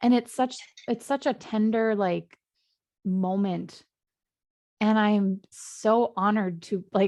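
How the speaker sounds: slow, choked-up voice catching with emotion. Talking with another speaker, getting choked up with emotion. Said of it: "I'm getting choked up right now".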